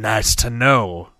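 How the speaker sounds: dry, wry, deadpan. A man answers a killer's boast about looking victims in the eyes, dryly. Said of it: "Ryu said dryly".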